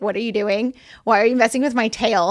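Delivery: normal talking voice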